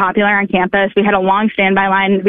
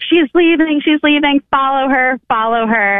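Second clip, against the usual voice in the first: re-enacted crowd screaming, much higher, slower; 6 semitones higher than usual. Recounting students chasing the speaker to her car, quoting them: retelling students screaming. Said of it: "many of them started screaming".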